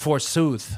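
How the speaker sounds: theatrical olde-English, Shakespearean stage delivery. Turning a proverb about lottery tickets into Shakespeare when asked: Shakespearean voice. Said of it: "Say it in Shakespearean way".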